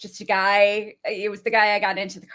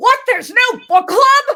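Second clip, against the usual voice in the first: put-on yell, higher and louder; 10 dB louder than usual. Retelling a TV scene where a character screams: imitating a scream. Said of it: "he just screams out".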